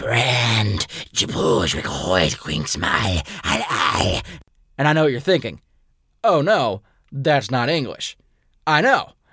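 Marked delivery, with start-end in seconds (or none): 0.0-4.2 eerie, very deep, slow, drawn-out dragon voice. Retelling meeting a dragon that answers in gibberish, creepy dragon voice. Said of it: "the dragon in this creepy voice goes".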